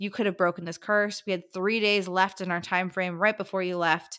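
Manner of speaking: plain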